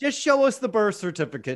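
high, loud, mock pleading voice.

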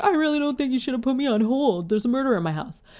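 high, hysterical sobbing through the words. Recounting being put on hold by 999, the speaker re-enacts the call: re-enacting hysterical crying. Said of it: "I'm hysterically crying now".

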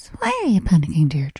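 put-on serene, gentle, very calm elderly woman's voice. Deirdre retells what a woman said when she was panicking, imitating calm old nun voice. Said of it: "Do you know that very calm, like old nun at school voice?".

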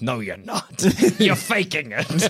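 put-on villainous emperor voice. Acting out Palpatine telling Darth Vader he is faking: Palpatine voice. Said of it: "and he's like".

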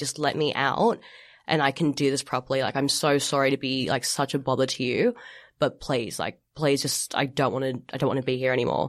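put-on tearful crying voice. Retelling begging hospital staff to be let out: retelling a tearful plea. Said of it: "begging them and crying".

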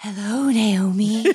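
airy, ethereal, otherworldly floating voice. Showing how the greeting to the host should have sounded: ethereal voice. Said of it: "I should have made my voice, like, ethereal".

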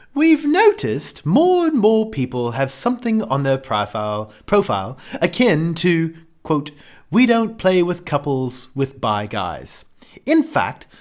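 put-on British accent. Reading a written question aloud on the fly: british accent. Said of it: "it's hard to read 'em in a British accent on the fly".

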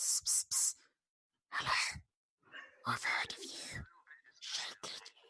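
whispered, beckoning lizard-like creature voice. Voicing a humanoid lizard thing calling from the bushes: lizard creature whispering. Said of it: "calls and whispers to you, like".

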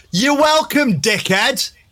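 very high, shrill shout. Showing a line shouted at someone who didn't say thanks, shouting. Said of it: "I want you to shout this one".

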